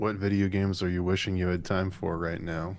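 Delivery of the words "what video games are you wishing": usual speaking voice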